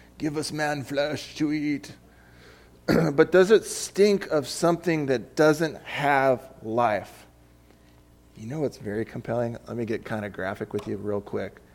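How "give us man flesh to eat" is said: voice of a fantasy beast or creature. Speaker testing whether something reeks of flesh, slipping into a Lord of the Rings voice. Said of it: "I almost sound like a Lord of the Rings thing".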